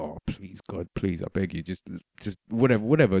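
half-whispered, pleading, begging murmur under the breath. Retelling praying during an issue at customs: imitating a prayer muttered under breath. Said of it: "Under my breath, I was praying".

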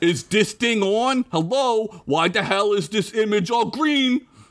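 put-on Italian accent on every word. Narrator voicing a hologram's first words in the story, in an Italian accent. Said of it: "I gotta do an Italian accent now".

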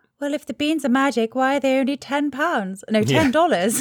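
put-on English lady accent, full of sass. Quoting a film character who questions the price of magic beans: sassy english lady voice. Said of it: "sassy English lady who's like".

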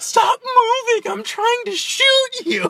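whiny, very high, loud, slow, drawn-out gripe. Retelling a side mission line from Arkham City: whiny Deadshot voice. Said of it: "really whiny in Arkham City".

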